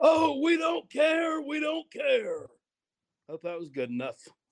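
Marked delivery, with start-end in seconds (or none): 0.0-2.5 put-on very high, stretched-out cartoonish voice. Asked by Travis Roll to say it in Jackpot's voice: Jackpot voice from Tigers. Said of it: "say it, Jackpot in the Tigers voice".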